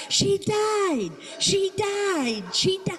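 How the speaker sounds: very high, shrill, slow, drawn-out screaming. Imagining a bystander at the graveyard: imitating a scream. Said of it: "she starts screaming".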